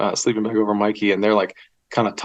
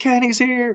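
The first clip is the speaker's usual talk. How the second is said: shrill, very high, excited shouted group scream; 14 semitones higher than usual. Retelling arriving at a tent late at night: imitating people screaming. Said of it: "We're all screaming".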